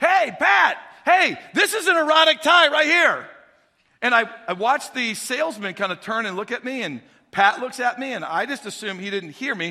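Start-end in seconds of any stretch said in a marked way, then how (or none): 0.0-3.3 very loud, high shout projected across a distance. Telling a story of shopping for ties, retelling calling out loudly to Pat. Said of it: "raise my voice a little bit and shout out".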